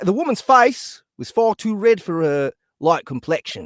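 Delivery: poor, unconvincing put-on English accent. Reading a story aloud to the group, in a bad English accent. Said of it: "It's just a bad English accent".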